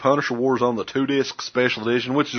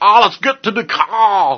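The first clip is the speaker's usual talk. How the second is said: loud, horrible fake New England accent, "car" stretched; 9 semitones higher, 5 dB louder than usual. Mocking the accents in a movie, in a bad New England accent. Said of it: "horrible ass, like, New England accents that everybody had".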